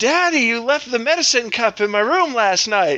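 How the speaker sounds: put-on high, yelling child's voice. Retelling your child screaming from his room: imitating the kid screaming. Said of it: "he's screaming".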